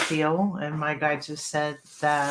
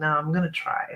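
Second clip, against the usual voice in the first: plain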